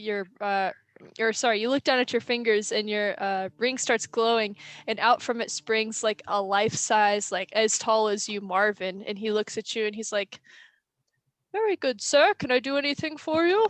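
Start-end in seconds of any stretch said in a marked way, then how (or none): 11.5-13.7 very proper, polite, prim, correct butler voice. A life-size Marvin springs from your glowing ring and greets you: prim and proper Marvin voice. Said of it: "He's like prim and proper".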